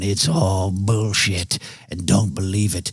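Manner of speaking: low, rumbling, dismissive growled grumble. Imitating own reaction to friends excited about aliens: low growl. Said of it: "with a low growl going".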